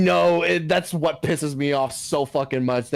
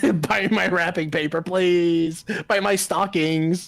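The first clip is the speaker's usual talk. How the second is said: mock pleading, higher; 4 semitones higher than usual. Imagining a video creator begging for videos: imitating someone begging. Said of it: "begging and shilling".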